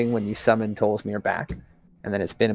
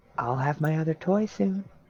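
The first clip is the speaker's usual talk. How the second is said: eerie, ghostly, high-pitched drifting half-whisper; 7 semitones higher, 5 dB quieter than usual. Voicing a half-whisper the players hear carried on the wind: half-whispering voice in the wind. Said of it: "whispers in, like, the wind".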